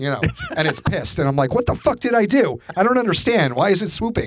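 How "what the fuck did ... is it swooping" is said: high-pitched, mock yelled protest. Retelling yelling at a bird swooping at the speaker: retelling own yell at a bird. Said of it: "I'm yelling at the bird".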